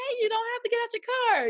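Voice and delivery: high-pitched, joking, teasing tone. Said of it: "she did it in a joking way".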